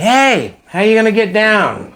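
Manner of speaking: mock very high, swooping shouted call. Retelling being left on a ledge, the speaker imitates the man yelling to him. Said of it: "he's yelling at me".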